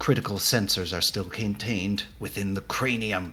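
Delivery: quiet muttering under the breath. Narrating a character who mutters her analysis in the middle of a fight, quietly under her breath. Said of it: "sort of quietly under her breath".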